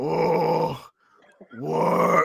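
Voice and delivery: put-on grunting brute voice. Mocking how the movie made Bane a grunting heavy: imitating Bane's grunting. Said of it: "all y'all got him to do is say".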